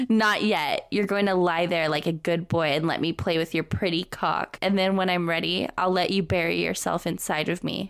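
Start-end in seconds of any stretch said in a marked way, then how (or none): none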